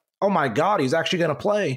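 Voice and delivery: plain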